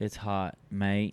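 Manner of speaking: Australian accent impression. Joking that a girl with an Australian accent is hot: Australian accent impression. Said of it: "That was better than me".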